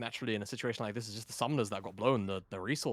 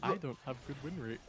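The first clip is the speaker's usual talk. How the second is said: mock childlike voice, higher and quieter; 3 semitones higher, 6 dB quieter than usual. Repeating the other speaker's line back, imitating a childlike voice. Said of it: "Why did you say it like a child?".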